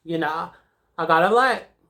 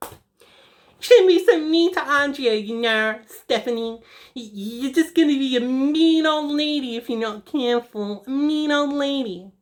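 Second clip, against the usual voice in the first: high, nagging, scolding mother voice, one word drawn out; 7 semitones higher than usual. Retelling what her mom tells her in high school, imitating mom's voice. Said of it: "I have to do the voice".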